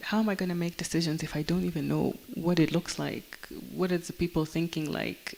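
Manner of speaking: usual speaking voice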